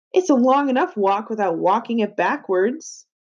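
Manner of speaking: plain reading voice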